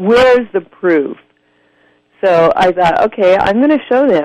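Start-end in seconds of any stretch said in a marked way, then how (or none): 0.0-1.2 patronizing, condescending, talking-down tone. Retelling how people always question her, in a mock-condescending tone. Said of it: "in a really condescending tone".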